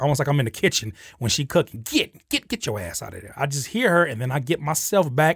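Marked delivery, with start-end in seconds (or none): 1.8-3.3 put-on soft, sing-song grandma voice. Recalling a grandmother's words from the kitchen, in a grandma voice. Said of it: "hear my grandmother's voice say".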